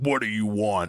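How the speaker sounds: mock very low, angry voice pushed from diaphragm. A parent describes how their kid sounds when made mad, imitating kid's angry diaphragm voice. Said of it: "coming out from like like the like her diaphragm".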